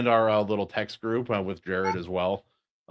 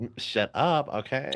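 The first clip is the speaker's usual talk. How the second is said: slow, drawn-out put-on woman voice; 3 semitones higher, 4 dB quieter than usual. Imitating the guest telling him to shut up: guy's put-on woman voice. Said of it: "That's just every v-, voice for every woman, a guy, when a guy pretends to".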